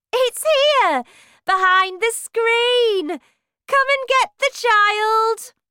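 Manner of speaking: gleeful, very high, happy shout. Reading a story aloud, the face looking down calls out: shouted happily. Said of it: "shouted happily".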